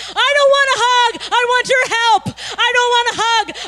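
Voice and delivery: loud, high-pitched, impatient shouting. The speaker re-enacts being held in a hug while wanting help, retelling own past yelling. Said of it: "I'm just yelling".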